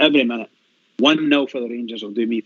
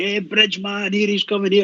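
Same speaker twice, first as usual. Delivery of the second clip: imitated shout, much higher pitched; 8 semitones higher than usual. Retelling how family shout at him in the Ibrox concourse, retelling a shout. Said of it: "they'll start shouting at me".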